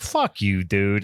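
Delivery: imitated flippant delivery. Retelling a movie scene where a character refuses to back down: imitating a flippant reply. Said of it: "he's being really, um, flippant about this whole thing".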